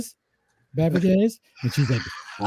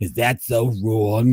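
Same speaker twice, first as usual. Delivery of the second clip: put-on raspy, gravelly voice. Retelling a comedian's TV bit: Harvey Fierstein impression. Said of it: "John Lovitz used to do a Harvey Fierstein imitation".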